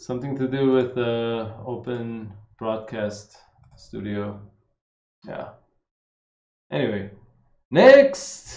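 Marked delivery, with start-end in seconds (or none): 7.7-8.6 sudden, too loud, high-pitched blurted voice. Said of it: "I said that loud".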